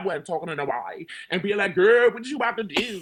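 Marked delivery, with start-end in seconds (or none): 1.7-3.0 loud, high, heavy put-on Washington DC accent. Showing how one did not talk every day: exaggerated DC accent. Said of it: "I did not sound like this every day".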